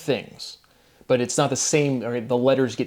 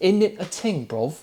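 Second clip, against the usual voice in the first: put-on high, dainty English accent, laid on; 6 semitones higher than usual. Mocking a philosophy talk with Alex O'Connor, mocking Alex O'Connor's English accent. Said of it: "in his English accent".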